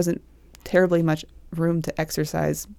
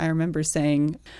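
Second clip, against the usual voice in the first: ordinary delivery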